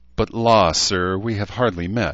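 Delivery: affectedly coy, simpering voice. A woman answers a man who has just apologized to her: simpering. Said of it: "she simpered again".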